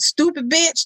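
mock hostile, harsh tone. Contrasting with the friendly version: imitating an angry insult. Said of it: "It's the tone".

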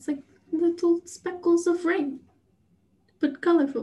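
slipping into Russian accent. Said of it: "Why did you go into Russian there for a moment?".

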